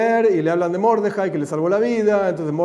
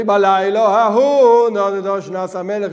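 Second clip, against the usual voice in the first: louder, raised voice reading out; 5 dB louder than usual. Showing how the Megillah reading gets louder at this verse: reading louder. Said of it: "empezás a leer más fuerte".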